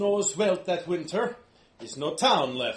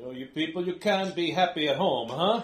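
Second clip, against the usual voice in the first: put-on dwarf voice with a Swedish-Italian accent. Voicing a dwarf character in a fantasy game, in a Swedish-Italian dwarf accent. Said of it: "a Swedish-Italian dwarf".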